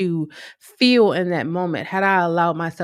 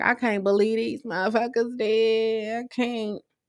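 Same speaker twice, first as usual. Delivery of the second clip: words broken through tears, crying, drawn out; 4 semitones higher, 4 dB quieter than usual. Retelling crying alone after locking the door: retelling own crying. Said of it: "I was crying like".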